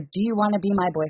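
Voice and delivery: ordinary talk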